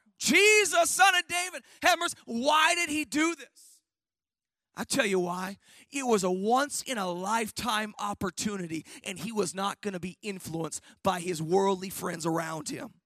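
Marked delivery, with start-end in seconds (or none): 0.2-2.2 mock crying out, high and loud, ever harder. Retelling how a blind man cried out to Jesus despite his friends: retelling a loud cry. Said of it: "he cried out the more".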